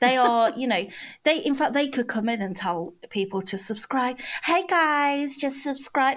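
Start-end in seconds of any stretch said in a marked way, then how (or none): 4.4-6.2 put-on American accent. Imitating a YouTuber's sign-off, in a put-on American accent. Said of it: "it's always an American accent".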